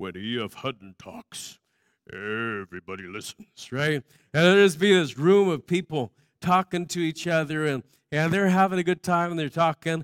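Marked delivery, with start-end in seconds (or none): 0.0-3.7 very deep, very soft, hushed announcer voice. Recalling an old commercial's signature line, imitating the deep E.F. Hutton announcer voice. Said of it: "And they had this real deep voice".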